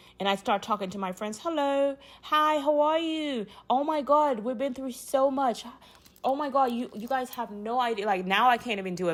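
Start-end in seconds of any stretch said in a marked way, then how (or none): 1.4-8.1 put-on, made-up British English accent. Retelling talking to friends with a sudden British accent, in a British accent. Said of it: "all of a sudden I get that British accent".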